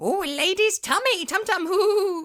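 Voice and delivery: very high, loud, slow, drawn-out squeaky weird voice. Imitating how Toad Boy cheers himself up: Toad Boy's weird voice. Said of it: "Or doing that weird voice".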